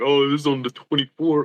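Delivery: mock smug, bragging, showing-off tone. Joking about which phone the camera is on: mock bragging. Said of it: "if I wanted to flex".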